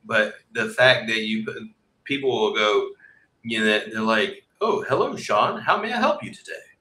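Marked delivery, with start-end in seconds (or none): 4.6-6.5 very high-pitched, chirpy, mechanical customer-service voice. Describing how sales reps greet callers, imitating them in a robotic customer-service voice. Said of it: "and it's all robotic".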